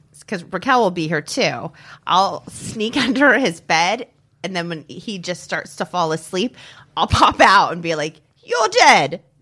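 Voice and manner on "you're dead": odd, weird, put-on British accent, pitched up. Describing popping out from under someone's bed as he falls asleep, weird British accent. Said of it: "Like a weird British accent".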